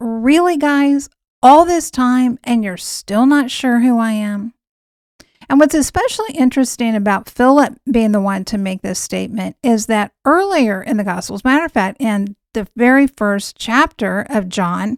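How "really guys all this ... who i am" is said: ordinary delivery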